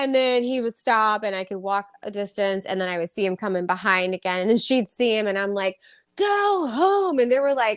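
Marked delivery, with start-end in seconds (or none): 6.2-7.2 play-acted very high, shrill screaming. Retelling sending away someone who kept following, the speaker re-enacts it: retelling a scream. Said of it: "I was screaming".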